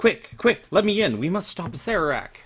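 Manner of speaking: high-pitched female stage whisper. Narrating a tabletop game scene as a voice speaks to the players: female voice whispering. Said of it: "A female voice whispers".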